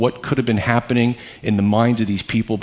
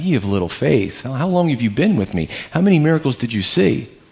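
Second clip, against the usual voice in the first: mild, tender, gently disapproving tone; 3 semitones higher than usual. Picturing how he would say it to them, gentle retelling. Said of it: "just gently to them".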